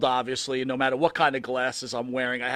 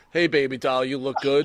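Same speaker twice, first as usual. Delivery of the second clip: half-hearted, insincere delivery. Showing how someone half-asses a compliment, in a half-hearted tone. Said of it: "how does someone half-ass a compliment? Like, is it just the tone?".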